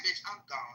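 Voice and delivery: dropped down, real quiet, hushed voice. Retelling walking out on a friend, speaking real quiet. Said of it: "And then I got real quiet".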